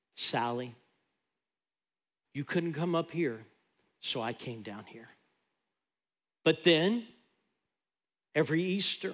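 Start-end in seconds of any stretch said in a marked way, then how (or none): 0.2-5.1 soft, hushed, barely there half-whisper. Preaching, voicing God speaking to a woman: imitating God half-whispering. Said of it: "he whispered".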